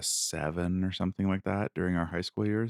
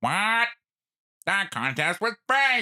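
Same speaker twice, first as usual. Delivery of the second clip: very high, loud, belted cartoon voice; 5 dB louder than usual. Doing SpongeBob character voices one after another, now a Squidward impression. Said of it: "Then Squidward".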